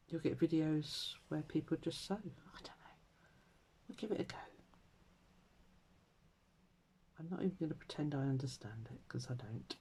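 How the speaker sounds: talking very quietly. Explaining what a search will bring up, talking very quietly. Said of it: "I'm talking very quietly".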